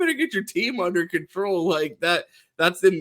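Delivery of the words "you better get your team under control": wild ranting voice. Comparing a coach to the movie scene: imitating Ryan Day talking crazy. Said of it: "Ryan Day talking crazy".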